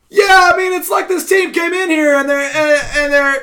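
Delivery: very high, very loud, shrill yell. Imitating a TV commentator who yells the entire time: imitating Tim Tebow yelling. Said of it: "just the entire time he just yells".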